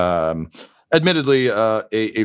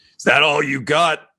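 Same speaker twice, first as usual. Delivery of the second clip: high, mocking snarl through bared teeth; 5 semitones higher than usual. Narrating a fight, voicing Red Reggie as he is blasted against the wall, snarling. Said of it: "he just snarls at you and it says".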